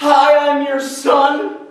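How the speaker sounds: slow, blubbering, sobbing crying voice. Imagining the other speaker sobbing in the tattoo chair: imitating someone sobbing. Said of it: "while you were sobbing and crying in the chair".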